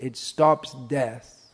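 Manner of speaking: slow, firm, emphatic delivery. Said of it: "emphatically said".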